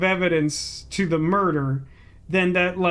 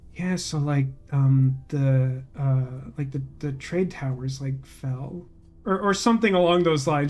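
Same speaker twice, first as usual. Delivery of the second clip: mock mutter under breath, much lower, slower; 4 semitones lower than usual. Retelling what he said after a call from the office, imitating a mutter under his breath. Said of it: "kind of just like under his breath".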